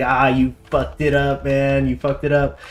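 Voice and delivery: ordinary delivery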